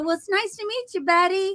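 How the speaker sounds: bright high-pitched tone.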